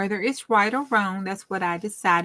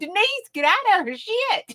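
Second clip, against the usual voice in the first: put-on, very high, hollering shout; 12 semitones higher than usual. Retelling yelling at her radio while driving to work, retelling her hollering. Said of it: "I was seriously hollering at my radio".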